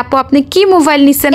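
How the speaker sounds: ordinary delivery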